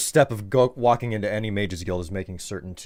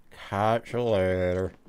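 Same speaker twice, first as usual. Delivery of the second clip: put-on slurred, drunk-sounding speech. Playing a drunk character taking leave of someone, drunken slur. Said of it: "Really helps to hit that slur".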